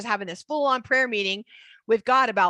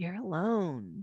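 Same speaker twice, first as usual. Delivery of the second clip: low, soft, slow, lonely hissing voice. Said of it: "his voice does not sound like that".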